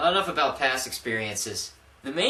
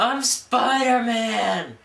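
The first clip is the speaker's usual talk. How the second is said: mock shrill, very high, loud drunken bar-room yell; 9 semitones higher, 6 dB louder than usual. Retelling standing up in a bar while drinking: imitating own yell. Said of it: "stood up and yelled".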